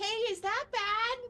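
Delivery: very high, yelling call-out. Calling out to a crewman, yelling out. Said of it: "I yell out".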